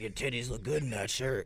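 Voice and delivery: low, hushed, crude, sleazy-sounding voice. Speaker recounting a crude remark a man made, imitating him. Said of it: "he was all like".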